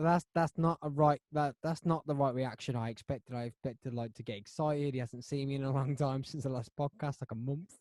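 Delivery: ordinary talk, nothing marked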